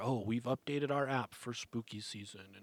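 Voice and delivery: ordinary talk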